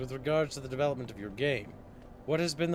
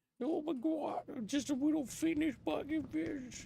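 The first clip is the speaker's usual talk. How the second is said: very high, hoarse, raspy little squeak; 13 semitones higher, 5 dB quieter than usual. Speaker voicing a character, in a raspy sore-throat voice. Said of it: "He's got like a raspy voice because his throat hurts".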